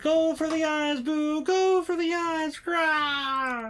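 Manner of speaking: slow, drawn-out battle cry. Reading out a card's battle cry: scream. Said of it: "I would have had a better scream there".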